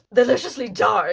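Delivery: over-the-top theatrical reading, booming and very loud. Reading a short book pitch aloud: exaggerated drama voice. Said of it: "Let's do it in a drama voice".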